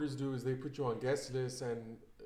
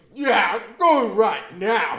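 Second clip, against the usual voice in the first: mock, very loud, slow, slurring drunk man; 8 semitones higher, 17 dB louder than usual. Retelling what a man said on the phone late at night: imitating a drunk man. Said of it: "all drunk".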